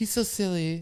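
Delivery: acted soft, high-pitched voice. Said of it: "put on this [name] voice".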